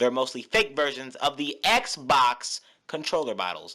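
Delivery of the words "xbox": accent on the word xbox. Arguing that pc controllers copy console ones, stress on xbox. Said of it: "Why did you say it like that?".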